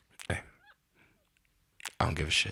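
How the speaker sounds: low, swooping, dismissive shut-down tone. Retelling how a stepdad ends an argument: imitating stepdad shutting it down. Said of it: "that was my stepdad yesterday".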